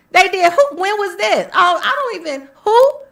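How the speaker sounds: high, loud, feigned clueless mock-confused tone.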